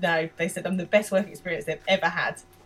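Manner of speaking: plain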